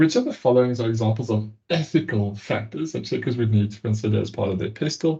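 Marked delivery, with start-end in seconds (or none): none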